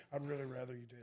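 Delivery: soft, flat, dull, unwilling monotone, acted out. Describing a man in a commercial, imitating a monotone voice. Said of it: "the tone of voice is like".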